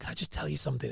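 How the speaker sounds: hushed, confiding, secretive whisper. Demonstrating the whispering tip from The Way of the Wolf: whispered. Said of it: "whispering is".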